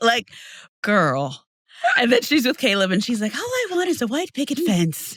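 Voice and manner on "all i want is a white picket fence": mocking girlish voice, higher and quieter. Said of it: "speaks like the whitest girl alive".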